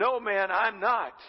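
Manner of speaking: most defiant, loud voice. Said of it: "in a most defiant voice".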